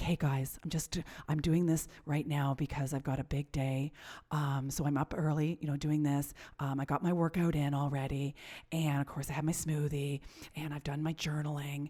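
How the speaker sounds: soft, hushed half-whisper. Imitating an author recording her podcast early in the morning: imitating someone half-whispering. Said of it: "she's whispering 'cause it's so early".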